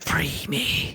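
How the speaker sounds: eerie, scary monster creature voice. Voicing a creature answering a telepathic message: scary creature voice. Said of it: "That was scary".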